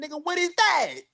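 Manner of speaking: high, fast, mocking taunting tone.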